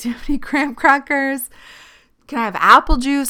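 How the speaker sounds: high, loud, wheedling, pleading tone. Retelling a hospital stay, imitating own begging. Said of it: "so I was begging".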